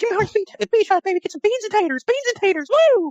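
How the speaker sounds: very high, goofy, cartoonish pitchman voice. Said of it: "I had to get one [name] uh, impression".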